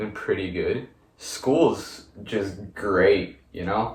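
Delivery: slow, sarcastic tone. Answering how life has been: sarcastic. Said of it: "That didn't sound sarcastic at all".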